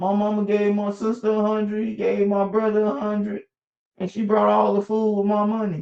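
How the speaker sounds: put-on high, whiny child voice, sobbing. Telling a story about a boy, imitating the boy crying. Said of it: "The boy crying like".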